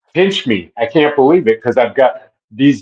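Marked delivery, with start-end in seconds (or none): none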